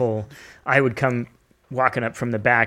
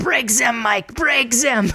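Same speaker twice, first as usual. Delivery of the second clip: odd put-on German accent, very high pitched; 12 semitones higher than usual. Quoting the man who ran the jail, in a weird German accent. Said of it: "the guy had this weird German accent".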